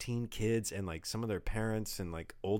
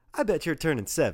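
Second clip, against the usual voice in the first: very loud, high, sure-of-herself confident voice; 5 semitones higher, 10 dB louder than usual. Retelling what their mom said to them, imitating a confident guess. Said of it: "she goes very confidently too".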